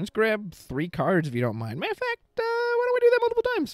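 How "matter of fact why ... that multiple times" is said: very high-pitched put-on character voice. Streamer voicing an old researcher character asking to grab cards; high-pitched voice. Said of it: "I don't know why my voice got so high there".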